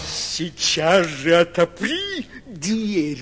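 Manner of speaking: growling big bad wolf voice. Reading a fairy tale, the narrator voices the wolf at Nif-Nif's door, growling. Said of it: "прорычал волк".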